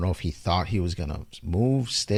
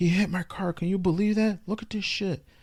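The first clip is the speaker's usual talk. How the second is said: put-on, very high, furious-sounding big guy yell; 12 semitones higher than usual. Retelling how a huge guy yelled at his girlfriend, imitating a man yelling. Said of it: "he's like yelling at his old lady".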